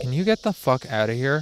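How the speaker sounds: ordinary delivery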